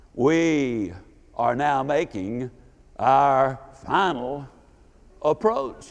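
very deep, resonant pilot announcer voice. Retelling the aircraft captain's intercom announcement, deep, resonant captain voice. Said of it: "in that deep, resonant voice said".

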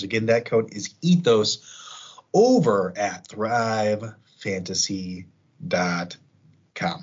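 very slow, deliberate, spelled-out delivery. Podcast host repeats a promo code at the end of an ad: very slow. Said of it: "I don't know why I said it so slowly".

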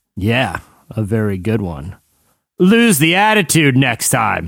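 slow, drawn-out delivery. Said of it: "you can become David Caruso with every".

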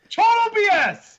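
very high, shrill shouting yell. Objecting to another speaker's point during a show discussion: shouting. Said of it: "Why are you shouting it's total BS?".

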